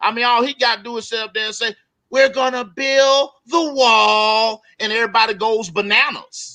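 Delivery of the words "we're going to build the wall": mocking, very slow, high-pitched, wall drawn out. Mocking a three-word slogan: mocking Donald Trump impression. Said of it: "I'm mocking Trump now".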